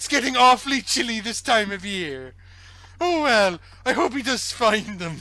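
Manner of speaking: put-on high-pitched Welsh accent. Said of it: "Such a good Welsh accent".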